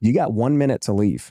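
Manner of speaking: ordinary delivery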